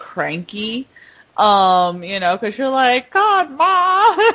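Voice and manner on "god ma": put-on Southern belle-ish accent, much higher, louder. Recalling being a cranky teenager snapping at Mom, almost a Southern Belle accent. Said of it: "this Southern Belle accent when you're like".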